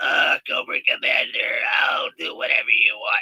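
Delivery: raspy, creepy character voice, rasped out. Recalling a cartoon character who served Cobra Commander: raspy Scrap Iron voice. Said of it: "He had this raspy voice".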